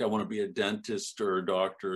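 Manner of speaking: ordinary talk, nothing marked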